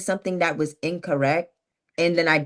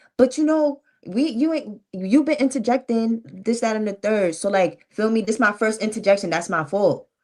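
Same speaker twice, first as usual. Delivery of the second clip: heated, high, defensive pushback; 5 semitones higher than usual. Recounting an argument, the speaker replays getting defensive with a man. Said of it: "I did get defensive".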